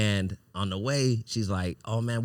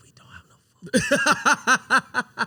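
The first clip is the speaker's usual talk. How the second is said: mock meek voice, very high-pitched and very drawn out; 8 dB louder than usual. Retelling a trip with no food, imitating own humble voice. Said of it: "humble in my voice".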